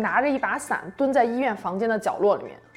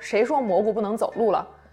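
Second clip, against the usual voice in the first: usual speaking voice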